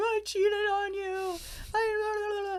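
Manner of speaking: very high-pitched, tearful crying voice. Retelling calling him to confess: imitating own past crying. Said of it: "crying and, like, calling him".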